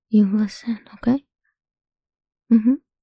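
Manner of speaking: normal talking voice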